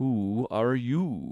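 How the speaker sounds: languid, sleepy voice, drawn-out you. Narrator reads the Caterpillar addressing Alice, in a languid, sleepy Caterpillar voice. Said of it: "addressed her in a languid, sleepy voice".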